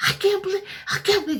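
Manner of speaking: mock pissed-off furious rant pitched very high. Retelling his reaction to getting the ring back: imitating him angry. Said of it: "He got really pissed and was like".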